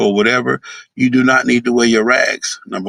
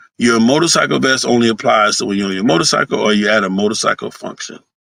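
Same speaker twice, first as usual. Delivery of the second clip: ordinary talk, nothing marked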